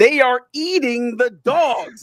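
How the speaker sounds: slow, unhinged, deranged madman voice. Retelling how a debate line was said: imitating an insane person's delivery. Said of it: "the way an insane person would say".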